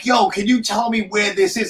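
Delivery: play-acted light casual tone. Retelling trying to get a forklift driver's attention in a warehouse: retelling own yell. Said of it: "and I'm yelling".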